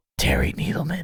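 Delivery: soft, close whisper right into the ear. Reading out donor names into the listener's ear, whispering.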